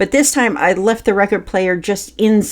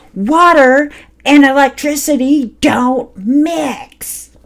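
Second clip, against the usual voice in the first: put-on, slow, high-pitched, spitting, furious, raging shout; 6 semitones higher, 4 dB louder than usual. Retelling the father's outburst over the record player: imitating the father yelling in rage. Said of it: "spitting as he yelled".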